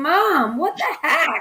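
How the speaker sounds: exasperated, screaming outburst. Retelling finding an unopened book, imitating screaming at mom. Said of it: "I remember screaming at her".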